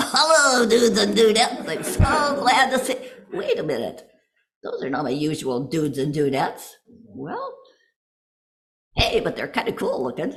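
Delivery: animated, swooping, sing-song hand-puppet character voice. Voicing a hand puppet greeting new friends: hand puppet voice. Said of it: "I will give you my voice and you can talk".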